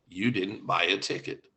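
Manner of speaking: deep voice from heaven, carefully pronounced. Retelling a joke, the speaker voices the Lord answering a praying woman: deep booming voice. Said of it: "replied with a deep, booming voice from heaven".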